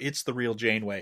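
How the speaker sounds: ordinary talk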